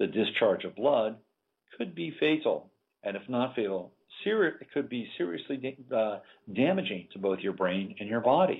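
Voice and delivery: calm, placid, matter-of-fact announcer voice. Imitating a drug commercial's disclaimer announcer: calm, placid, matter-of-fact voice. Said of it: "very calm, very placid, matter-of-fact voice".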